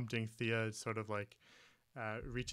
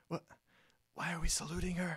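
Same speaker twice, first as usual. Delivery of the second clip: hushed whisper, higher; 6 semitones higher than usual. Playing Thea as she starts to salute, whispering. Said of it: "but she whispers".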